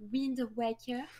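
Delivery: put-on said in a French accent. Recalling saying the game title when young, with a French accent on Wind Waker. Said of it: "with my French accent when I was young, I would have said like Wind Waker".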